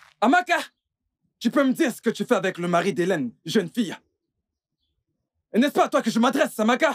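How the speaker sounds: very high, furious, angry shouting. A father confronting his daughter over another woman's husband: shouting angrily. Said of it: "Pourquoi cries-tu?".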